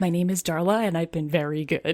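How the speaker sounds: put-on secretive, confiding whisper. Retelling a girl introducing herself to Santa: imitating a secretive confiding whisper. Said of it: "she leans in like it's a secret".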